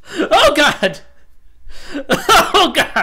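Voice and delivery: very high, very loud, drawn-out shriek. Playing a game, startled by a dinosaur with no music, screaming in fright. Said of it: "That was not me screaming like a woman".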